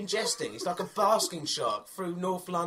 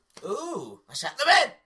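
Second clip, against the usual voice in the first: put-on high, loud comic elderly woman voice; 5 semitones higher, 6 dB louder than usual. Showing off funny voices with friends, in an old lady voice. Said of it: "this is an old lady".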